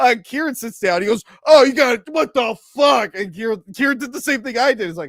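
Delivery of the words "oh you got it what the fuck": outraged angry yell, loud and high. Retelling a moviegoer yelling at people who sat in front: imitating an angry yell. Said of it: "this guy yelled at".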